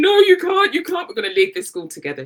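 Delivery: weeping, tearful, begging, protesting voice. Retelling begging the head teacher not to leave, imitating own crying plea. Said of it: "I'm crying".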